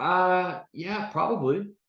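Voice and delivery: very high, halting, unsure, hesitant, acted-out delivery. Speaker acts out how someone might reply, imitating a hesitant answer. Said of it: "there's some hesitation, takes him a while".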